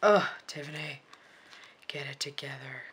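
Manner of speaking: spooky, creepy put-on character voice. Scolding oneself over a crooked sticker: creepy voice. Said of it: "that was, like, creepy voice".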